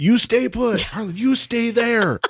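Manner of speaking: acted, drawn-out, very high, slow yell. Retelling a scene where Robo Jack yells at Harlan: imitating Robo Jack yelling. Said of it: "yelling at him".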